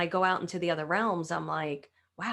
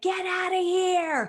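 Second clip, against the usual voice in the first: very high, very slow, drawn-out Brooklyn scream; 12 semitones higher, 5 dB louder than usual. Speaker recalls yelling at something she didn't want there, retelling a Brooklyn-attitude scream. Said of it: "screaming at the top of my lungs from a very Brooklyn attitude".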